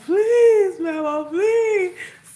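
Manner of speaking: put-on sobbing, begging wail, very high and loud. Recalling fetching their own switch, speaker acts out begging mama: imitating crying and pleading. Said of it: "we both crying the whole time".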